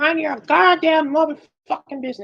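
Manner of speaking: put-on very high cartoon grandpa old man voice. Repeating a line about minding one's business, like the grandpa from Family Guy. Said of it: "You sound like the grandpa from fucking".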